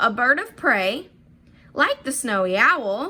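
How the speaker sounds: brief pauses before and after like the snowy owl. Explaining commas in a sentence, pauses around like the snowy owl. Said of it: "see those pauses there?".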